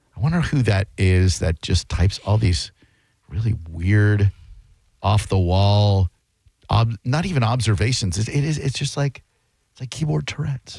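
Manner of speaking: hushed whisper. Between callers, the speaker wonders aloud to the listeners, whispering. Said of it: "I don't know why I'm whispering".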